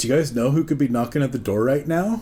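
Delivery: plain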